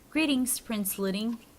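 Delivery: ordinary delivery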